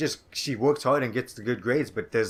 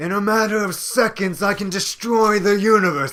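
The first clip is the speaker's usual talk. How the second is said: pompous, snooty, lofty voice, very high and loud; 10 semitones higher, 9 dB louder than usual. Speaker showing how a character from Nier sounds, doing a Grimoire Weiss impression. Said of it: "my Grimoire Weiss impression".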